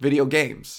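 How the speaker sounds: the word "games" hit hard with stress. Joking that you stress the second word: stress on games. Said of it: "you gotta stress the second word".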